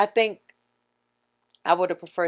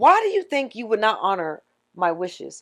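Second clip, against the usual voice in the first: ordinary delivery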